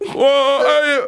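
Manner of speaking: very high-pitched, cheeky put-on voice. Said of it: "I mean, like that".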